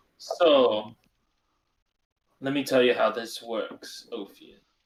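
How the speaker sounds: sinister, menacing tone in a put-on accent. In a role-play, a character starts explaining how things work, menacing, in his accent.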